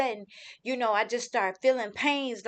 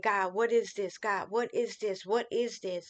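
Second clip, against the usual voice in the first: put-on crying, sobbing the words out. Retelling the moment before the phone call about their son, retelling own crying. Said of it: "just crying like".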